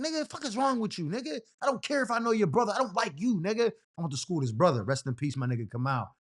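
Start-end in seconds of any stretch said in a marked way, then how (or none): 0.0-3.7 furious, snapping, lashing-out rant, pitched up. Retelling snapping at a sister's boyfriend: retelling own angry snapping. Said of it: "But I'm just snapping".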